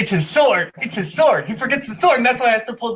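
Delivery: gushing, overexcited blurt, high and loud. Quiz contestant answering a question about The Sword in the Stone, way too excited. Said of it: "I'm way too excited".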